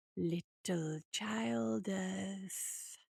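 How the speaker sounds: very hushed, slow, low, drawn-out hissing voice. A voice speaks from the end of an alley: slow, sibilant voice. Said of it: "said a slow, sibilant voice".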